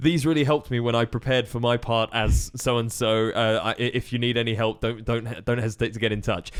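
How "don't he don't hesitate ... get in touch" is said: ordinary talk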